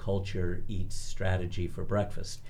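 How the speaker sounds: ordinary delivery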